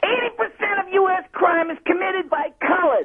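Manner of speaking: over-the-top, very high-pitched grotesque parody voice. Retelling a radio bit, playing a caller in a grotesque send-up: grotesque send-up of a racist woman. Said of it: "this grotesque send-up of this woman".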